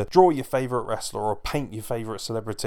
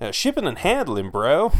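terrible fake American accent, higher and louder; 4 semitones higher, 3 dB louder than usual. Plugging t-shirts to listeners, giving the American term in a terrible American accent. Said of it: "terrible accent, I know".

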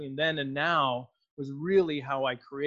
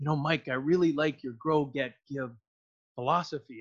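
mock whispering. Retelling what someone once leaned in and said: imitating someone whispering. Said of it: "he leaned in and he whispered".

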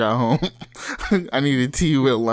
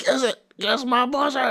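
put-on, very high, jeering shouted tone; 13 semitones higher than usual. Acting out a concertgoer yelling at robbers: imitating a shouted taunt. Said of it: "you're like".

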